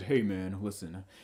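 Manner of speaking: very low, soft, easygoing, laid-back hippie voice. Retelling a stranger who tapped him on the shoulder: hippie voice impression. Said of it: "He sounds like a hippie or or something".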